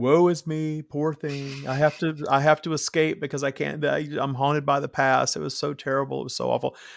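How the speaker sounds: put-on, self-pitying, woe-is-me victim voice. Speaker mimics the self-victimizing voice they say the Matrix teaches, mock self-pitying voice. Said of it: "in that voice that I'm doing".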